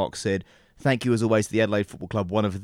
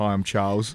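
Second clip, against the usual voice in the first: mumbled words running together indistinctly. Retelling an airport microphone soundbite attempt: muttering like Charlie Cameron. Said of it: "Charlie Cameron muttering a".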